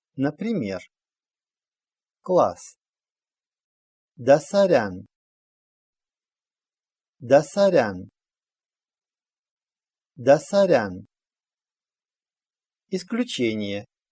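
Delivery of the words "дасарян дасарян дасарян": Дасарян, final syllable stressed, falling tune. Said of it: "ударение в слове ставится на гласную последнего слога".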